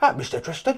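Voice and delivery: badly done, put-on cockney accent.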